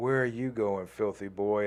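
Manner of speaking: put-on heavy Italian accent laid on thick. Retelling a woman's words after she hit him with a riding crop, thick Italian accent. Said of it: "in this, like, f- fucking thick Italian accent".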